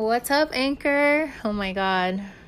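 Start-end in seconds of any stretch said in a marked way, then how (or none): 0.0-1.3 very country-sounding accent, pitched higher. Greeting Anchor at the start of a recording, sounding country. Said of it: "I sound so country".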